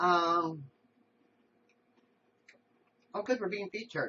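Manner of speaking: speaking while chewing, mouth full of food. Noticing you're being featured on the show, talking while chewing. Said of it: "I'm chewing".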